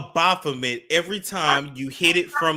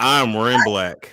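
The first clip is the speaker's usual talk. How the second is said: mock manly voice, lower and louder; 4 semitones lower, 5 dB louder than usual. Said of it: "man voice".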